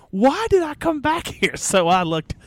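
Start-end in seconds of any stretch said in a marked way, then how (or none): 0.2-1.6 very high screaming. Retelling a heel coming out right by the entrance; retelling a scream. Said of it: "he comes out and he screams".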